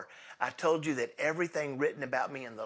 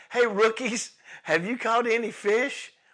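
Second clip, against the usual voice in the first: high, loud, calling-out holler; 9 semitones higher, 8 dB louder than usual. Acting out a call to worn-out fishermen who caught nothing, retelling a holler. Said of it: "Jesus hollers out".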